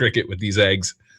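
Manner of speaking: usual speaking voice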